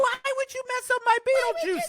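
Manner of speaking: voice shooting up very high in pitch. Retelling a question put to Tim Burton, imitating own very high voice. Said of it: "And my voice went very high".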